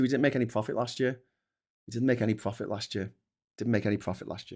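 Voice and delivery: ordinary talk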